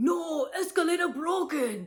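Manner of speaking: very high, very loud, shrill, urgent full-blast shout. Retelling a man who grabbed and pulled them backwards, imitating his voice. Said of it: "exactly what that person sounded like".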